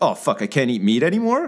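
ordinary delivery

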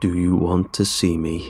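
guttural, gravelly growl from deep in the throat. Reading a story, Cooper speaks over the narrator lying stiff, in a guttural gravelly voice. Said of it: "The voice was guttural and gravelly".

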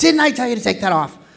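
high, loud angry yell. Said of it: "He gets so mad".

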